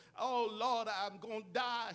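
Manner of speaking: ordinary talk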